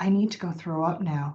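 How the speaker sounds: confiding, secretive stage whisper. After getting off stage, speaker tells a fellow presenter; hushed voice. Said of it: "I said to her in like a hushed voice".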